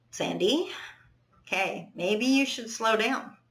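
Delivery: put-on loving, kind, caring, protective tone. Retelling the voice in their head now: imitating a kind, loving inner voice. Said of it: "talks to me like I would talk to someone I love".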